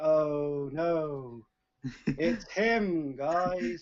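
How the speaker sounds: very slow, loud, drawn-out, dripping sarcasm. Playing a character in the background, reacting really sarcastically. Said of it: "in the background really sarcastically".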